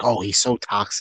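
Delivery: normal talking voice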